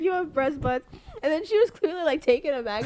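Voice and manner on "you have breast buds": put-on Filipino-accented speech. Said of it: "still has her, like, her Filipino accent".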